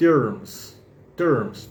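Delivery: loud American accent, curled r in "terms". Explaining in Portuguese how an English word sounds, American accent on terms. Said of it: "a gente fosse falar no sotaque estadunidense, a gente diria terms, terms, torcendo".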